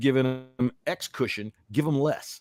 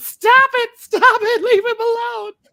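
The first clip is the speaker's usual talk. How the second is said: put-on frightened pleading voice, higher and louder; 10 dB louder than usual. Acting out a wife running onto the field to stop a tackle: put-on frightened plea. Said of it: "I want Sierra to be fearing for her husband's life".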